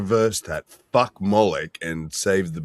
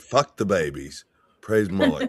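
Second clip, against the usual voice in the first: sarcastic voice and tone. Joking with friends about babies sacrificed to moloch: sarcastic voice. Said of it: "the level of sarcasm in my voice".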